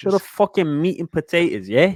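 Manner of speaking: put-on London street accent. Voicing what impatient people say, speak in a put-on London street accent. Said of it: "that top boy really got your accent".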